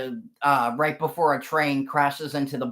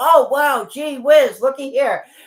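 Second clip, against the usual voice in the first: very high, loud sarcastic quip, pitched way up; 11 semitones higher, 7 dB louder than usual. Retelling a movie scene where Tommy Lee Jones finds empty chains: imitating sarcastic Tommy Lee Jones. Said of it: "sarcastic, ... humorous lines from, you know, Tommy Lee Jones".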